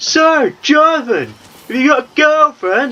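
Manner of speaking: shrill, very high, top-of-lungs bellow. Describing a man insistent on helping them get a girl, imitating Raymond yelling loudly. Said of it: "just yelling at the top of his voice".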